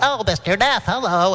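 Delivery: silly, high, put-on little elf voice. Retelling phone chats, greeting a man on the phone in an elf voice. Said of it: "we liked that elf voice so much".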